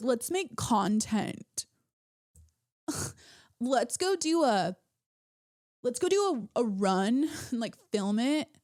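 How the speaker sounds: slow, douchey surfer-bro drawl, musclehead gym-bro voice. Describing men at the gym, the speaker mimics them in a musclehead surfer bro voice. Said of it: "like musclehead surfer bro".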